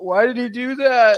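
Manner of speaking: put-on high-pitched, loud, weepy crying child's voice. Retelling a daughter asking a question through tears: imitating a crying child. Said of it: "as is streaming tears and goes".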